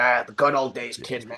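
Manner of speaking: put-on old-timer voice, talking around a chomped cigar. Playing an old fight fan chomping a cigar: old-timer chomping a cigar. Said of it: "chomping on a giant cigar in his mouth".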